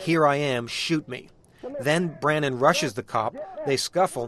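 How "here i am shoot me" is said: ordinary talk, nothing marked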